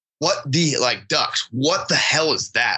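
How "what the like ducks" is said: plain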